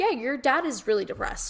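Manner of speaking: ordinary talk, nothing marked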